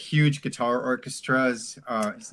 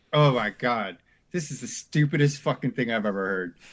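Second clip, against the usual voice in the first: imitated laughter. Retelling first hearing a record at home: imitating own past laughter. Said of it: "and I just started laughing".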